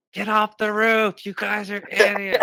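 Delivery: very loud, very high, shrill furious screaming. Speaker acts out what a sister told two brothers on the roof, imitating screaming. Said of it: "just screaming at us".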